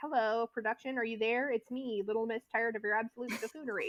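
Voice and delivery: ordinary talk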